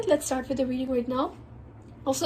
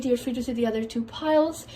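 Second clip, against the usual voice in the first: ordinary talk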